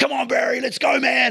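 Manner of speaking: very high, loud, fired-up hype yell. Describing firing up a man doing push-ups in the gym, retelling yelled encouragement. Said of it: "and like yelling at him".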